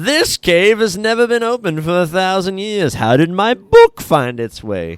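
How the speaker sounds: play-acted, very loud, very high, wildly over-eager. Describing a Diablo game, speaker acts out a character's line, imitating over-enthusiastic Deckard Cain. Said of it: "Super enthusiastic for no reason".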